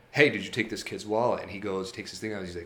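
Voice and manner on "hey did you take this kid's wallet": mock annoyed, irritated tone. Retelling confronting a guy about a kid's wallet: retelling a pissed-off question. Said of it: "kind of pissed off".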